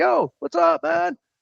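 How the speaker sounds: very high, very slow, creaky casual holler. Retelling how a man called out to firefighters at a fire: imitating someone calling out to firefighters. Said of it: "whistling at the, at the firefighters like".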